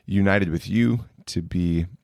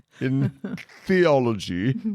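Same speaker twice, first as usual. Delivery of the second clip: put-on formal announcer voice, higher pitch; 7 semitones higher than usual. Naming a degree aloud: mock commencement announcer voice. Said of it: "Now you sound like the commencement address guy".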